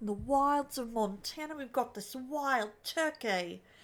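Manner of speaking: trying for Australian accent. Deciding to attempt the accent on the spot: attempted Australian accent. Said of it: "I need to attempt to do the Australian accent".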